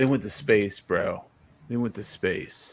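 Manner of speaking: low, totally chill surfer-dude voice. Explaining the voice was meant to sound like Bill and Ted: Bill and Ted voice. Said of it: "I was trying to sound like Bill and Ted".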